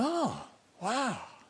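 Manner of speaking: high, soft, hushed, impressed, awed gasp.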